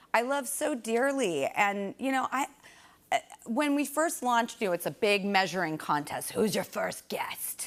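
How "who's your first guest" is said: put-on raspy, hoarse voice, lower pitch. Acting out what was asked when the show first launched, raspy put-on voice. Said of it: "[ Raspy voice ]".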